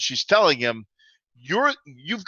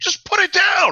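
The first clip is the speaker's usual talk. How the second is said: put-on angry shouting, higher and louder; 5 dB louder than usual. Playing a character scolding a teammate over an axe: in-character yelling. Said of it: "she's just yelling at you like".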